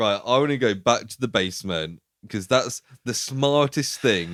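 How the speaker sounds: usual speaking voice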